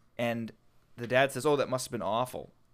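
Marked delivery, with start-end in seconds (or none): none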